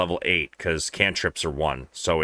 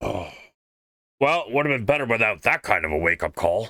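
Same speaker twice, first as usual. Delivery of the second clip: gruff put-on character voice; 4 semitones higher than usual. Player voicing Bob, just woken from a nap, in a gruff voice. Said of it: "I'm doing a, a gruff voice instead of an old man voice".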